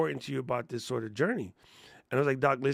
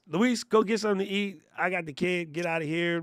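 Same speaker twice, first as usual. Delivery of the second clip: put-on bossy woman's voice, much higher; 5 semitones higher, 3 dB louder than usual. Retelling how a woman took charge of everybody, imitating a bossy woman. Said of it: "She was bossing it".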